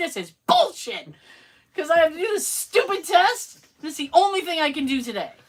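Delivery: put-on angry rant. Retelling own reply about having to do a test: imitating own angry words. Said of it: "through my phone, angry".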